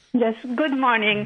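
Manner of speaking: loud talking around a mouthful of food. Caller greets the show host on air, talking with mouth full. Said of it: "Sorry, my mouth is full".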